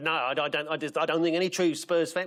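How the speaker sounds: put-on South African accent, imitated voice. Quoting the Spurs manager's answer to journalists: Ange Postecoglou impression in South African accent. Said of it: "Why is he talking in a South African accent?".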